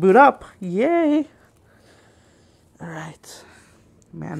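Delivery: delighted, very slow, swooping, drawn-out sing-song excitement. Watching a new Apple device boot up for viewers, excited high-pitched voice. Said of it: "My my voice is getting all high pitched".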